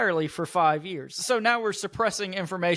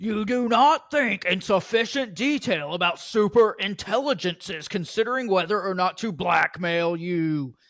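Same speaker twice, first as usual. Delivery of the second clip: slow, angry ranting voice; 2 semitones higher than usual. Reading an all-caps passage aloud, angry internet voice, Alex Jones-like. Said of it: "I'm going to read it in an angry internet voice".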